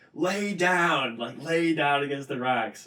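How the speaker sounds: put-on screaming voice. Retelling a guide's warning in wind and rain: imitating a guide screaming. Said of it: "he's just screaming at us".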